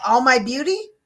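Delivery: loud, heavy, acted teenage scoffing sarcasm. Retelling what the granddaughter kept saying: imitating Lavina being sarcastic. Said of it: "she would be sarcastic as heck about it".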